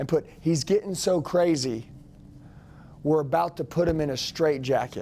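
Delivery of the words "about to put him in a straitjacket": ordinary talk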